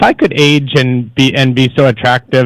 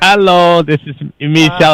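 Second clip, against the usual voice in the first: higher put-on French accent; 4 semitones higher than usual. Explaining an earlier phone greeting by repeating it: imitating own French accent. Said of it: "I was doing the French version of it".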